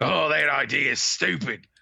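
put-on grumpy cartoon-hero voice. Retelling reading a Care Bears book to a child: grumpy Wolverine voice. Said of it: "sound like Wolverine from the Pride of the X-Men".

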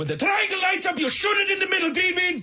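enraged, furious, shrill, very high yell. Recounting a gaming wipe, imitating a furious Lithuanian guy's yell. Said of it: "Just one furious Lithuanian".

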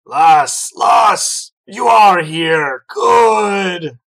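put-on very loud, booming, very slow, tipsy drunken voice. A game master voices Varric hailing Lyssa: drunk Varric voice. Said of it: "And you turn around to see [name], / but has certainly had some drinks. / lass? ... son".

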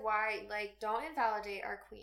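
ordinary delivery

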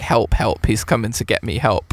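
ordinary talk

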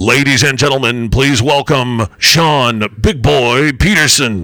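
loud jazz-club emcee announcer voice. Introducing a guest by name, done like the jazz announcer. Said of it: "I need to do it like the jazz announcer".

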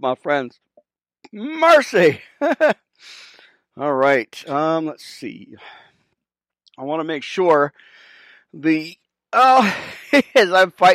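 winded, catching breath between phrases. Talking to viewers in the middle of a fight, out of breath. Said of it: "you guys can hear me out of breath a little bit".

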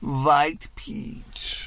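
put-on strong Persian accent, v for w. Retelling what a woman said about the hookah flavor, in an exaggerated persian accent. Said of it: "she said with a strong V".

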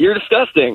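cheery, upbeat, chipper, bright and high. Retelling own reaction on hearing everyone was throwing up; retelling a chipper reply. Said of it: "react in like a chipper tone".

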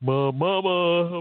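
mock grown man crying out, high and loud. Retelling how a former co-host cried to his wife: imitating Leroy McKenzie crying for help. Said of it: "he would be crying out to my wife for help".

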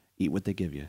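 muttering to himself. Retelling a scene where a character gags on soup: imitating quiet muttering to himself. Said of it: "says to himself real quiet".

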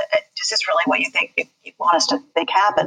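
sort of disbelieving, incredulous tone. Retelling own rebuttal question in court, imitating own incredulous tone. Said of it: "sort of incredulous".

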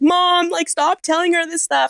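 very high, tearful, hysterical sobbing. Retelling what he said to his mom, imitating hysterical crying. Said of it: "he's hysterically crying".

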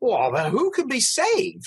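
very high, swooping, despairing exasperated outburst. Retelling Saint Peter's question in the Gospels, imitating Saint Peter's exasperation. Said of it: "this voice exacerbation".

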